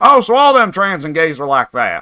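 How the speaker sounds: put-on dim, dumb-sounding Southern accent. Imitating moviegoers leaving the theater in a put-on dumb southern voice. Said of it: "now you've got me doing it".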